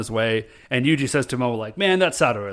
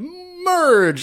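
put-on excited little boy's very high, drawn-out holler; 3 dB louder than usual. Retelling a little boy playing O-Ranger: imitating a kid yelling. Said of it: "he's yelling".

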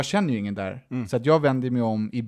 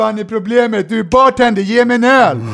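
piercing yell, very high and very loud, shrill; 11 semitones higher, 12 dB louder than usual. Retelling what a high guy screamed at the dj: retelling a scream. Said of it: "skriker den här påtända killen typ så här".

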